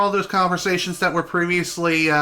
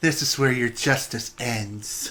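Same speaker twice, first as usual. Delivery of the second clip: mock cold-killer delivery, lower and quieter; 4 semitones lower, 5 dB quieter than usual. Comparing two versions of a villain's line, imitating a cold-blooded killer. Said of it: "he sounds more like a cold-blooded killer".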